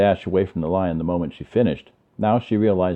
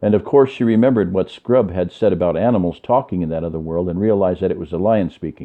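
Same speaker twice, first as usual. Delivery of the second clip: ordinary delivery, nothing marked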